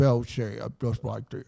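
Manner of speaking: quiet, deep cartoon dog voice. Showing another speaker what a cartoon dog sounds like: Droopy voice. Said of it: "I can't do a great Droopy voice".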